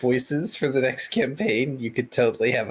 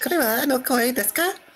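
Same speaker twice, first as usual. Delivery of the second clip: put-on cute female anime girl voice, higher pitch; 13 semitones higher than usual. Trying out the voice for a female anime protagonist: kawaii anime girl voice. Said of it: "the Kawaii voice".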